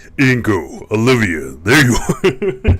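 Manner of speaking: very deep, very loud booming bass, swooping pitch. Greeting two people who just showed up, throat acting weird, in a very deep voice. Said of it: "my voice is very deep".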